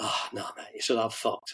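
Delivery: quiet, mock whisper. Retelling a friend's reply after asking if he was all right, retelling a whisper. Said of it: "You're in whispering mode now".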